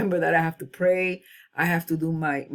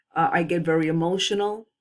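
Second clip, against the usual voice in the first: ordinary talk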